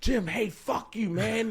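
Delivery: very high, drawn-out, unhinged furious rant. Retelling how he went crazy on his boss Jim: imitating himself ranting angrily. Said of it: "I just went crazy on him".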